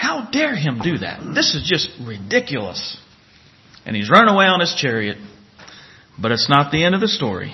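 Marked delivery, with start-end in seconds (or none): 0.0-3.0 soft, furious muttering under breath. Imagining what a man in a Bible story said to his servants, acting out muttering under his breath. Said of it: "I could imagine him muttering under his breath".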